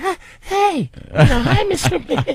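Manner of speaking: put-on squeaky little-girl voice, very high. Retelling meeting someone he admired: imitating himself like a little girl. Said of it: "like a little girl".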